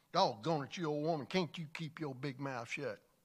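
acted clenched-teeth, snapping delivery. Telling a joke, a husband snaps at his wife after a second ticket, retelling a line through clenched teeth. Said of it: "he said with clenched teeth".

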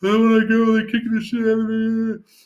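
sobbing, very high-pitched, loud crying wail. Retelling crying in the back of a car while she drives, retelling her own crying. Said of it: "I'm crying in the back of the Chevy Nova going".

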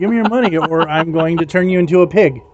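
ordinary talk

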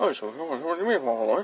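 swallowed, soft, low-volume mumbled delivery. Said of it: "his volume of his voice was like".

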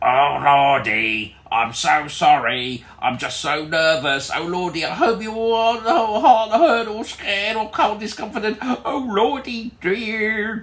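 very high, croaking frog voice. Telling a story where a trapped figure apologizes, in a croaky froggy voice. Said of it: "in a froggy voice".

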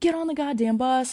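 put-on screaming, high and loud. Retelling what the fleeing bus driver screamed at the kids; retelling a scream. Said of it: "he screams".

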